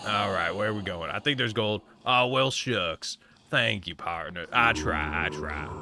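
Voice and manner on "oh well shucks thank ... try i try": put-on slow, scratchy Western cowboy drawl. Thanking a viewer for a compliment while mining in a game: put-on cowboy voice. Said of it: "My voice is getting real scratchy off of talking like this".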